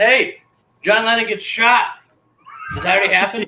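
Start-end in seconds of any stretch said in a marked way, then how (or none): 0.0-1.9 high, raised hollering yell. Retelling a movie scene where a character shouts from a roof: imitating someone yelling. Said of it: "yelling at all the people below him".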